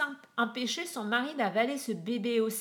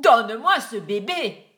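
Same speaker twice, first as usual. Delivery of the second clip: shouting at full volume; 10 dB louder than usual. A man repeats his demand to a woman who refuses, shouting.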